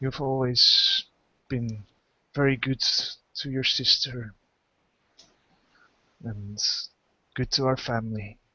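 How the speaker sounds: feeble, very weak, halting voice breaking mid-phrase. Voicing the sick father speaking to his other child: very weak voice. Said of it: "speaks with a very weak voice".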